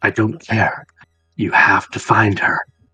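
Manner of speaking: deep, breathy, commanding man's voice. Voicing a high-ranking gentleman, in a deep, commanding voice. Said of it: "deep, commanding voice".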